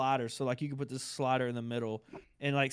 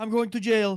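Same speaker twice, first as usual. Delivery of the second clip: put-on loud, heavy French accent laid on thick; 8 semitones higher, 9 dB louder than usual. Retelling how a guy reacted to launching Overwatch two: thick French accent. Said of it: "because you know he's got like a really thick like French accent".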